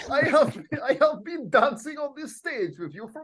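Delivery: put-on Transylvanian-accented speech. Acting a scripted band scene, speaking to another member: Transylvanian accent. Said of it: "I was turning into a Transylvanian accent now".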